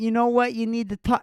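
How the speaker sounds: put-on British accent. Speaker imitates an imagined outsider chiming in, mock British accent. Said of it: "a British accent going".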